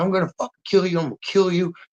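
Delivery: acted, raw, screaming yell. Retelling a friend yelling over a locked door: imitating someone screaming. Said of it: "screaming at me one day".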